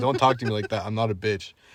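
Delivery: ordinary talk, nothing marked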